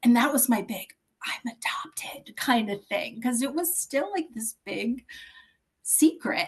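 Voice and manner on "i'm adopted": soft, hushed whisper. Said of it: "Even that you have to whisper it".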